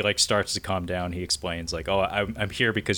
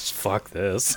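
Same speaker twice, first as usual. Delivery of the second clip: acted, mimicked muttering under the breath. Describing a movie scene, acting out Tara muttering under her breath. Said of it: "she actually like mutters under her breath".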